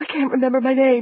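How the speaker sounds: high, frightened, panicked voice. Reading a novel aloud, a frightened woman: panicked voice. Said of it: "in a panicked voice".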